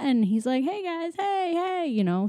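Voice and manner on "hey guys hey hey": very high, beaming, super happy voice. Retelling a movie scene where Flint greets everyone: super happy Flint voice. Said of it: "super happy".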